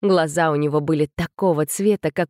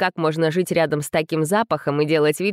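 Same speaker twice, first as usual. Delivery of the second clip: plain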